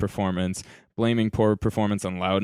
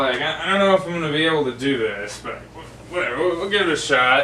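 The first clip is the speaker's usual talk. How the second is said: put-on drunk voice, higher; 7 semitones higher than usual. Playing a drunk person about to start a pool game: acting drunk. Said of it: "I'm pretty drunk".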